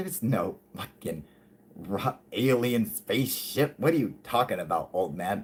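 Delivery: scornful, dismissive, sneering mocking tone. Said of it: "Like in a mocking tone".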